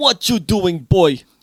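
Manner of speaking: high, loud, effortful put-on Jamaican patois accent. Trying out patois-style lines while others discuss the jamaican dialect: put-on jamaican accent. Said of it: "He's really trying to get the accents right".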